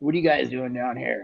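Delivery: rough voice full of gravel. Retelling being approached by a cigar factory owner, Carlos Sanchez gravelly voice. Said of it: "this kind of gravelly voice".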